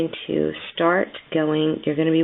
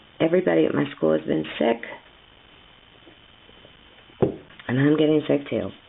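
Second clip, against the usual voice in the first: hoarse voice, giving out. Teaching crochet while getting sick, with a hoarse, failing voice. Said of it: "my voice is going".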